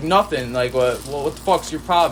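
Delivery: ordinary talk, nothing marked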